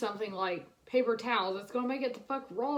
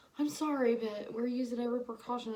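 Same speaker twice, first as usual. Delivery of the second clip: put-on soft-spoken little old lady. Retelling a phone call with a clerk: imitating a soft-spoken old lady. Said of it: "she's a little soft-spoken old lady".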